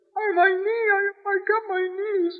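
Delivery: put-on teary little-kid wail, pitched high, weepy. Retelling coming home hurt as a child and going to dad, imitating own childhood crying. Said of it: "with tears streaming down my face".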